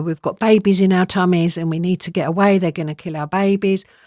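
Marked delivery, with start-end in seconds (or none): none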